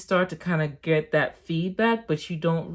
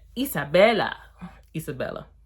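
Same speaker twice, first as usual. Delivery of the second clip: put-on Haitian-accented speech. Introducing a new character named Isabella, trying a Haitian accent. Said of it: "I'm trying with my Haitian accent".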